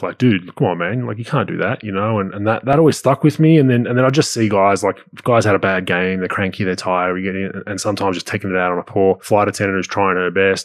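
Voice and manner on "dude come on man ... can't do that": laughing, sarcastic, teasing jab. Retelling teasing a teammate on a plane: retelling own laughing sarcastic jab. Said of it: "kinda laughing, sarcastic jabs".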